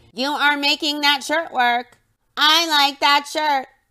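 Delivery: mechanical, machine-like robot-mode voice. Retelling how a woman makes fun of a man's compliment; robot voice. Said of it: "she does a robot voice and says".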